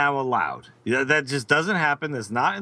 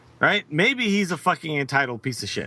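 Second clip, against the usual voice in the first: plain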